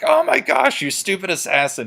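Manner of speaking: loud, very high, frustrated yelling outburst. Recapping a game, imitating a player who finally loses it, yelling at his model. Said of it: "He's just yelling at his model".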